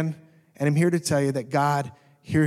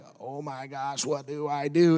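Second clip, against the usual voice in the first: stunned, slow, frozen, at-a-loss panic; 2 semitones lower, 4 dB quieter than usual. Retelling freezing as the house burned: imitating own past panic. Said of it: "I panicked, I froze".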